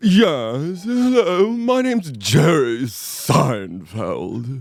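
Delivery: swooping sing-song, drawn-out "yes" with swinging pitch. Showing how his actual voice supposedly sounds, introduce yourself in a Jerry Seinfeld impression. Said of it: "Seinfeld's actual voice sounds a little something like this".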